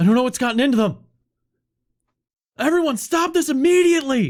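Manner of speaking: very high, rushed, rising top-of-the-lungs scream. Voicing a panicked director ordering everyone to stop: screaming at the top of lungs. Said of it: "she screams at the top of her lungs".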